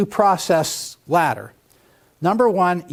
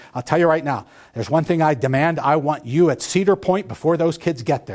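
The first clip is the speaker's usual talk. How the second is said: plain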